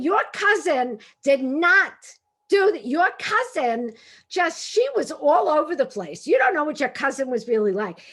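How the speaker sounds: put-on shouting fishwife voice. Retelling a loud quarrel with a friend at dinner: retelling fishwife yelling. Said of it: "fishwives, yelling over the back fence".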